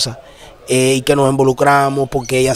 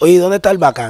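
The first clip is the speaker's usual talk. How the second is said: sneering, sarcastic, mocking tone; 4 semitones higher than usual. Retelling how neighbours asked where he was: imitating a sarcastic question. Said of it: "a ella le decían con sarcasmo".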